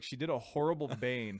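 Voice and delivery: ordinary talk, nothing marked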